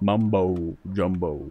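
slow, drawn-out Southern US drawl. Showing how the southern version is said, a slow southern drawl. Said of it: "It's when you say it all slow".

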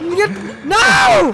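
high, loud dismayed shout.

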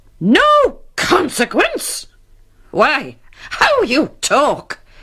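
sharp, snappy, very high-pitched delivery. A wife retorts to her husband's soothing reassurance, sharply. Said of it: "retorted Mrs. Squeers sharply".

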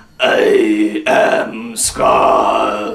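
throaty robotic villain voice, announcer-like. The speaker demonstrates the voice he came up with; Scarr voice. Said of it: "I came up with this voice".

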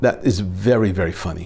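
ordinary talk

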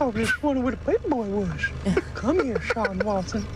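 put-on creepy old man voice. Talking about cartoons with friends, the speaker slips into Herbert voice from Family Guy. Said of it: "That guy's the creepiest character in any cartoon".

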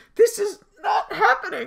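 overwhelmed, very high, breathless squeal.

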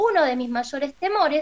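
ordinary delivery

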